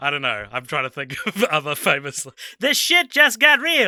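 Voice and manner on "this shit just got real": very high, shrill, very loud, belted out. Trying out famous lines for a part written with him in mind, do a Jon Lovitz impersonation. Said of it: "That's my John Lovitz impersonation".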